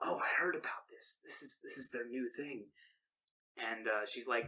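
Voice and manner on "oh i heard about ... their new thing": put-on whisper, quieter. Retelling interns whispering to each other, retelling interns whispering. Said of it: "like whisper to each other like".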